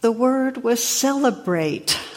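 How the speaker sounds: acted-out, high voice choking on sobs. Telling a joke, the speaker voices the weeping old abbot in a choking voice. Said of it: "And choking voice".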